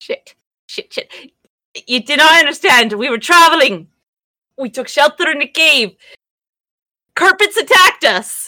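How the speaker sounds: pleading, begging voice. Voicing a gnome character explaining to guards: pleading in character. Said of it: "the gnome pleading about dead bodies".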